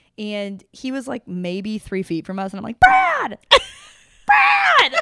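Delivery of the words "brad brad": shrill, very loud, high-pitched yell. Retelling spotting a man just feet away and calling out: retelling shouting a name. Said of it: "I'm yelling".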